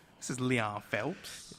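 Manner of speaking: slow, badly done, drawled ladies-man voice. Attempting a quick impression after naming The Ladies Man: Leon Phelps impression. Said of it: "I wish I could do a Leon Phelps impression".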